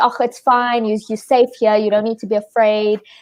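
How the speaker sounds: ordinary delivery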